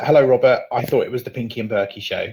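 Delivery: ordinary talk, nothing marked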